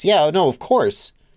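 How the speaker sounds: dismissive condescending tone. Answering a viewer's super chat: dismissive condescending tone. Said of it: "I said that in a way that ... makes it sound like I think you're like".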